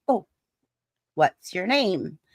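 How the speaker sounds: normal talking voice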